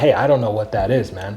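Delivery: ordinary talk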